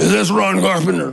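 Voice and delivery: gruff, rough, creaky voice. Retelling a phone call from an unrecognized number, in Roe Messner's gruff voice. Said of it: "the most gruff voice I've ever heard".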